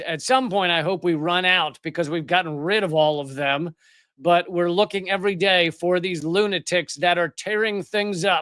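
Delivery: ordinary delivery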